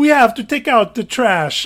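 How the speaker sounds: loud, comedic, over-the-top exaggerated Italian accent. Retelling a line Megan always says, in Megan's exaggerated Italian accent. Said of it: "it's like the most comedic Italian accent ever".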